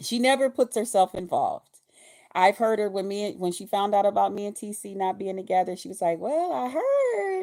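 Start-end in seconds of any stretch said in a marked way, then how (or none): 6.2-7.4 put-on little laugh while talking, higher pitch. Retelling what Very Carey said on hearing the news, imitating her little laugh. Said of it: "with her little laugh and stuff".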